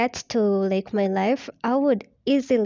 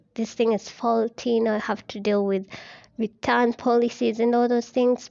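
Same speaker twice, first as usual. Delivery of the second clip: normal talking voice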